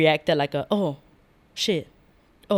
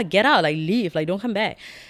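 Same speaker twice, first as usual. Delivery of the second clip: acted-out angry outburst; 3 semitones higher than usual. Retelling ordering a man out of the club, retelling an angry outburst. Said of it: "I remember feeling so mad".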